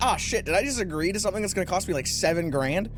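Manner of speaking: plain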